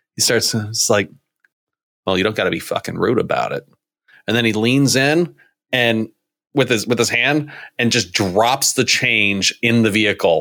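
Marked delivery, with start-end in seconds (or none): 0.6-3.7 quiet, lower-pitched voice. Retelling a toll worker's reply to a customer, getting real quiet. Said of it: "gets real quiet".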